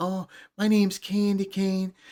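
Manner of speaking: slow, drawn-out, put-on girly voice. Retelling a movie prank over a CB radio: imitating a girl's voice. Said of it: "talking like a girl".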